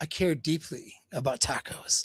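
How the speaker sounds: whispered, slow, breathy fake sincerity. Retelling a guy faking interest in tacos: imitating fake sincerity. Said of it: "Kinda fakes, acts like".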